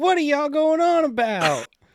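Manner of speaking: very high, barging-in character voice. Imagining a friend bursting into a family argument as a TV mailman: imitating Kurt. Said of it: "and then he's like".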